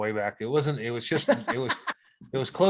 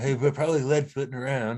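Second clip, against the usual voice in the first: mock-sarcastic tone, higher pitched; 3 semitones higher than usual. Speaker retells what he said to them, retelling a sarcastic remark. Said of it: "he's sarcastic like that".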